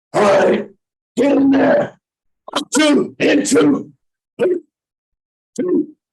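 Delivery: very high, intense, drawn-out coxswain-style call. Showing how rowing coxswains made their calls: imitating an intense coxswain call. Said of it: "it'd be that intense".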